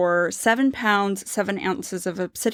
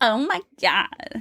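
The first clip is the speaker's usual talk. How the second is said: put-on exaggerated over-the-top Valley girl accent. Picturing the other speaker talking like a Valley girl, the speaker tries an exaggerated Valley girl voice. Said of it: "I don't know what that was".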